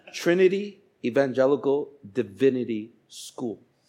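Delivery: very slow, deliberate, drawn out word by word. Retelling how the speaker names the school to people, said really slowly. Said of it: "this part I say really slow".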